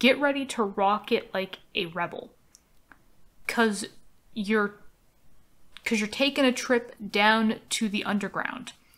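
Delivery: ordinary talk, nothing marked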